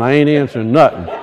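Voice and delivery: low, soft, fast, stubborn mumble. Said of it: "everybody's going".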